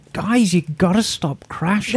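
ordinary delivery

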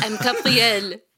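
put-on French accent. Naming the chef from Emily in Paris, a speaker does a French-accented Gabriel impression. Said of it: "you nailed French".

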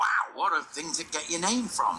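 ordinary talk, nothing marked

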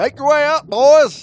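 put-on loud, high-pitched yelling in Southern accent. Retelling what a man in Georgia told the group, in a Southern accent. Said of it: "Did he have a southern accent".

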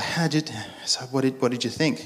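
hushed, very quiet, stumbling and sheepish. Retelling asking a friend after the service what he thought: imitating a sheepish question. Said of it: "Pete says to his friend sheepishly".

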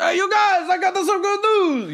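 very high, eager, hollered shout. Retelling a show scene where Papa announces news: imitating Papa yelling. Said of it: "Papa yells".

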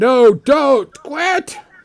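put-on, frantic, high-pitched screaming. Voicing temple priests who see a cat attacked: screaming to stop. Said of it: "They're, like, screaming to stop".

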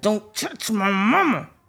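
through clenched teeth. A mother of three boys retells her son's line: imitating Joe through clenched teeth. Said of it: "He talked through his teeth".

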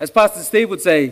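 normal talking voice

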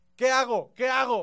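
high, very loud yelling in panic. Retelling the driver's cry while hitting the gas, retelling a panicked shout. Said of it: "mientras gritaba".

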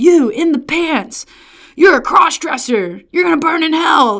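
shrill, loud, vitriolic screaming in a street-preacher voice. Retelling campus preachers pointing at women: imitating a screaming street preacher. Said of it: "screaming at folks about how we were all going to hell".

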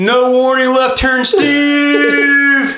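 radio announcer voice. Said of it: "got the radio voice".

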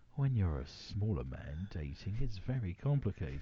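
low, hushed, lewd, salacious Victorian storyteller voice. Reading out a 36-year-old user's quote to the others, salacious Victorian voice. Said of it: "I thought I'd go salacious Victorian".

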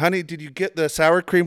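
sweet doting call. Retelling his son acting like his partner at checkout: imitating an affectionate partner.

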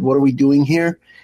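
ordinary talk

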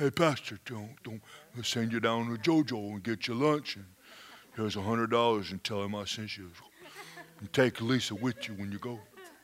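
put-on Italian-American mobster accent. Retelling how a man who knows the mob spoke, the speaker uses an Italian-American mobster accent. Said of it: "They really talk like that".

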